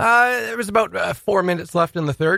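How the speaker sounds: high-pitched, choked-up voice squeezed out. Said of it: "Good Lord, what's going on with you right now?".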